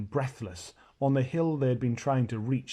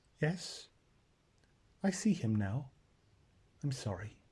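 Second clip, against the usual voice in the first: tiny, very small, soft little voice; 7 dB quieter than usual. Reading the story aloud, the narrator gives Susan's words to Lucy in a very small voice. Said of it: "in a very small voice".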